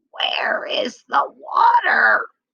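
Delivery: tiny, small, hoarse, raspy, breathy little voice. Narrating a story, the chicken asks the astonished frogs, in a small, raspy voice. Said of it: "said in a small, raspy voice".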